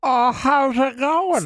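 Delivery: high-pitched put-on old man voice. Chatting with others, the speaker shows off an old man impression. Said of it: "That's my old man impression".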